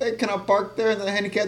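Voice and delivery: put-on Mexican accent, soft and high. Retelling someone asking a bouncer about parking, Mexican-sounding voice. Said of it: "Why does that sound so Mexican".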